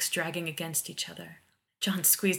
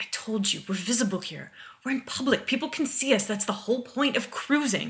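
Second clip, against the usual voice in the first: annoyed, impatient, irritated, pitched-up tone; 6 semitones higher, 5 dB louder than usual. Pushing away a man who begs for a kiss in public, irritably. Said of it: "said, irritably".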